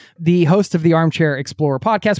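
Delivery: ordinary delivery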